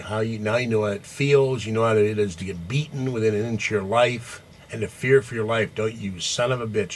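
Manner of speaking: ordinary talk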